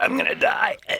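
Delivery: fake choking, words forced out, choked gasp. Retelling a film scene of fake dying: imitating fake choking. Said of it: "fakes, like, eh, eh, choking out".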